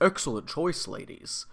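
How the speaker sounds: voice dropped deep, words breathed. Describing a minor character from an episode: imitating a deep-voiced waiter. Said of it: "the deep-voiced waiter who says".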